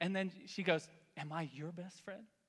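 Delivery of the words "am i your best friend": put-on, all sugary, sweet voice. Retelling how his wife spoke at her son's naptime: imitating sweet talk to a child. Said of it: "she's talking all sweet to him".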